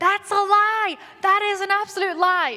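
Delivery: loud, high yelling in protest.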